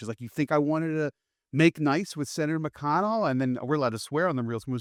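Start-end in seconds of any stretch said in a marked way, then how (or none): 0.2-3.3 mock, pitched-up, mild half-yell. Retelling how the sister yelled at her father: imitating someone yelling. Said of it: "even yells at him".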